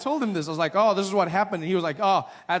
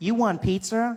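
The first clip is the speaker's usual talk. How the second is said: digital phone assistant voice; 4 semitones higher than usual. Retelling asking a phone assistant for help, imitating Siri. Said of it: "She's like".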